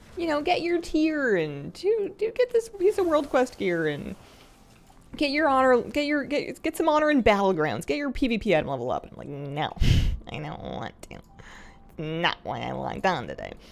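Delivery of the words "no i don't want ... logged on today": rough, low, creaky little gremlin grumble. Player refusing advice to grind gear and honor: gremlin voice. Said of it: "It's my gremlin voice".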